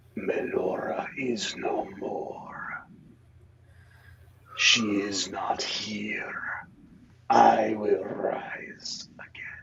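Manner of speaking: eerie, hollow, haunting whisper, drawn very slow. Voicing a voice heard in a character's mind: hollow, haunting voice. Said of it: "hollow, sort of haunting voice".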